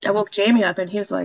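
ordinary talk

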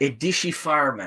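sweet movie-star style voice. Asked for some Van Damme sweetness, attempting his voice: Van Damme voice. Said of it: "Hit us with some Van Damme sweetness".

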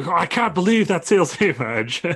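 high, stretched-out, drawn-out hollering yell. Retelling a moment from the show: imitating Paul Heyman yelling. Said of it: ""What are you yelling for?"".

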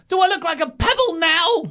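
very high-pitched scream. Retelling a wrestler's promo yelling at the camera, imitating Mankind screaming high. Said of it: "You know how his voice goes high".

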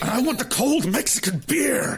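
very high, pushy, aggressive, entitled tone. Retelling a man's line they love to hear: imitating an aggressive demand. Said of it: "I love how aggressively he says".

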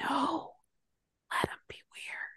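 soft, unvoiced whisper.

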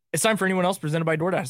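racing through at top speed, rattled off. Speaker testing top speaking speed on a sponsored segment intro, as fast as possible. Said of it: "I wonder what my top speed is".

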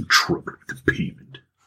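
muttering, mumbling under breath. Voicing a character walking away after paying: mumbling. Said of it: "mumbling under his".

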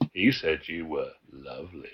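very low, hushed, creepy voice with long pause. Recapping a show, quoting Jack's line: retelling Jack's creepy line. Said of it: "Jack very creepily says".

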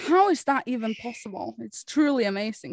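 ordinary talk, nothing marked

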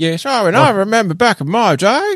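loud, very high put-on old-timer voice. Joking about dressing up as old men for a party: put-on old man voice. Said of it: "and have that kind of voice".

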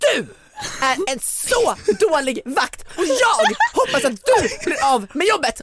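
very high, very slow, gaping, drawn-out, open-mouthed outburst. Retelling pointing at a man and speaking to him, mouth wide open. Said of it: "öppna munnen på såhär vid gavel".

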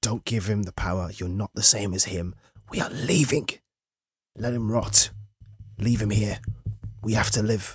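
hushed half-whisper, under the breath. Voicing a character urging the others to leave him to rot: half-whispering. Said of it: "will just whisper".

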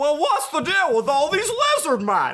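swooping, comic-style delivery. Trying out another impression on the others, a Jerry Seinfeld impression. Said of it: "It's just Jerry Seinfeld".

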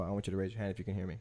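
quick, very quiet, faintest possible hushed voice. Showing how to get a room of kids to listen from the front: talking very quietly. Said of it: "you talk as quietly as you can".

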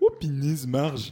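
very loud, high-pitched blurted outburst. Doing a quick impression after being asked to imitate someone: Homer Simpson impression. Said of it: "Homer, vite fait".

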